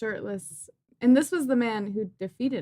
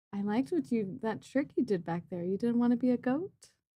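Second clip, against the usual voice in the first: quiet whisper in a character voice; 6 dB quieter than usual. Standing very close to a character and speaking into their ear: whispering in character. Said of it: "whisper in their ear".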